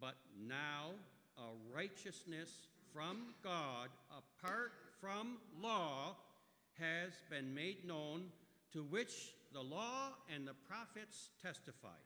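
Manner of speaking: slow, loud, high-pitched reading stressing every word. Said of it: "I'm going to try to read it slowly".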